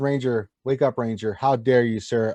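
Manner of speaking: ordinary talk, nothing marked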